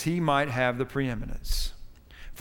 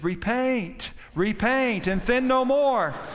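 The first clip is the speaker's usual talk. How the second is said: raised, pitched-up preacher voice calling out; 7 semitones higher than usual. Telling a sermon story, the pastor answers from the baptistry: raised voice. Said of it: "the pastor kind of raised his voice from the baptistry".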